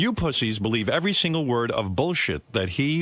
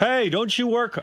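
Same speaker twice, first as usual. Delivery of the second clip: teasing yell, very high, slow and drawn out; 11 semitones higher than usual. Retelling yelling out to a woman who doesn't hear, retelling a yell. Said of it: "I yell out to her".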